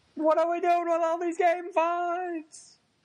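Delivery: high scream with long drawn-out fives. Trading impressions of Seinfeld screaming about game fives, do a screaming Seinfeld impression. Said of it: "Seinfeld screaming about game fives".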